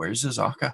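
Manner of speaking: hushed, quiet whisper. Waking a sleeping companion in character to ask where someone went: hushed whisper. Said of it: "in a bit of a, a hushed whisper and say".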